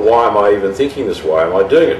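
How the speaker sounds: ordinary talk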